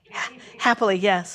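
ordinary delivery

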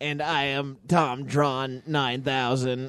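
mechanical robot voice. In a comedy sketch, an uploaded character introduces himself in a robot voice. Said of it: "which can only speak in robot voice".

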